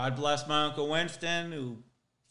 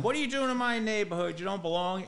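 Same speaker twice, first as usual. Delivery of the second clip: imitated yelling voice, pitched higher; 7 semitones higher than usual. Retelling how a friend got out and started yelling at the kids: imitating someone yelling. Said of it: "he starts yelling at them".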